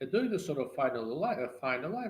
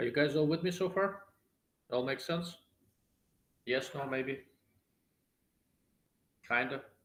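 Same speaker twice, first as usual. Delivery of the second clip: chewing between words, mouth full. Speaker checking that the audience is following along, talking while chewing. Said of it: "Sorry for chewing".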